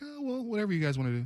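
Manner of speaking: high, quick, laid-back coach voice. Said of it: "he seems like he's like".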